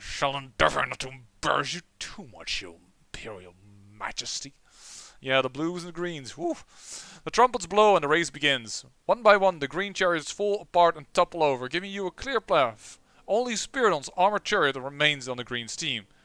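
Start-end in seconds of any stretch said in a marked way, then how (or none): 0.0-4.5 scornful, gritted-teeth politeness forced through clenched teeth. Narrator voicing Spiridon, the Greens' star, addressing the Emperor through clenched teeth. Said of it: "he says through clenched teeth".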